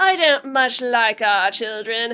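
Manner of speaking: put-on old Hollywood mid-Atlantic accent. Quoting a film line in a mid-Atlantic accent: Katharine Hepburn mid-Atlantic accent. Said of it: "Katharine Hepburn says in that mid-Atlantic accent".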